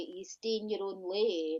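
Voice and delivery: plain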